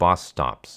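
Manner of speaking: ordinary delivery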